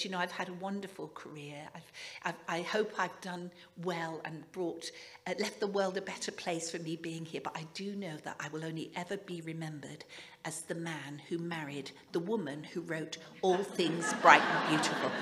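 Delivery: ordinary delivery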